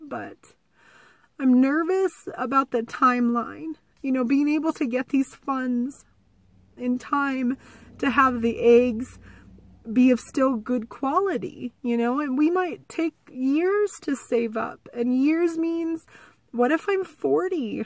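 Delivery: on the verge of crying. Speaker discussing worries about funding and the timeline, about to cry. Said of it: "I'm going to cry and I'm sorry".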